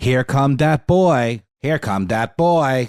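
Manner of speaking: slow, deliberate, robotic text-to-speech computer voice. Describing a favorite meme's audio track: imitating a computer voice. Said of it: "a computer voice".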